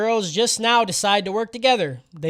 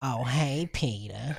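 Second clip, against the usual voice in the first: put-on sultry cartoon voice, lower and quieter; 7 semitones lower, 8 dB quieter than usual. Showing how to do a sexy Lois voice. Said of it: "I wanted to do sexy Lois".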